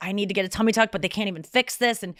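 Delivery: ordinary talk, nothing marked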